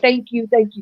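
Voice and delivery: play-acted, choked-up, tearful voice catching. Retelling a man's thanks after being helped, imitating choked-up thanks. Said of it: "and he choking up, tears coming down".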